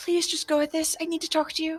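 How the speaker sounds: hushed, soft half-whisper, barely there, under the breath. A player's ghost character secretly speaks into another character's ear; half-whispering under breath. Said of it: "whisper under my ba- breath".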